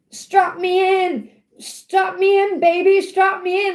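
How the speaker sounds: frightened, slow, drawn-out pleading tone. Retelling what he said before a roller coaster ride, imitating someone scared. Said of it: "Like he's so scared".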